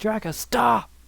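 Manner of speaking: put-on, very high shouted yell. Retelling the moment Supreme Kai yells at you to stop: Supreme Kai yelling. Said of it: "Supreme Kai yells at me like".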